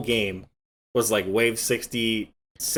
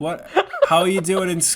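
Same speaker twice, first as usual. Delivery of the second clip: put-on high-pitched old woman voice; 9 semitones higher, 3 dB louder than usual. Podcast host announces doing the episode as a grandma on FaceTime: grandma impression. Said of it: "like a grandma on FaceTime".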